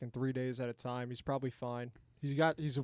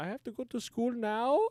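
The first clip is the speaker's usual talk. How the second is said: put-on German accent in a much higher pitch; 10 semitones higher, 4 dB louder than usual. Acting out Barron in a joking scene about his family, German accent. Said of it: "these are like German accents".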